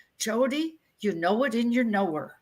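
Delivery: put-on Norway-accented speech. Quoting a mother's old saying: Norwegian accent. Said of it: "my mother said in her Norwegian accent".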